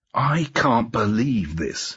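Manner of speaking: words hissed out, slow and drawn-out. [name] answers another man's claims about Bruno; hissed. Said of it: "he hissed".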